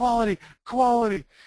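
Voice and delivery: high-pitched, loud yell.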